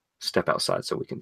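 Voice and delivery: quiet, hushed, threatening and menacing whisper. Advising how to handle a kid disrupting the class, quiet menacing tone. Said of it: "in the most menacing tone".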